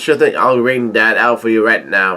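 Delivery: ordinary delivery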